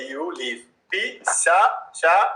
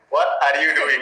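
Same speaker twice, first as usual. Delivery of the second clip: ordinary talk, nothing marked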